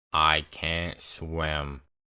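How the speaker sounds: low, flat, dead-level deadpan monotone. Telling of fighting for his life, speaker quotes Ben, imitating Ben's monotone. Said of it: "he says in the most monotone voice".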